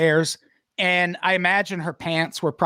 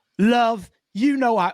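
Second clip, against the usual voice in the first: put-on male voice, British accent, pitched up; 6 semitones higher than usual. Retelling a story, the speaker voices a guy who turns around, in a British accent. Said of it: "I don't know why he's got a British accent".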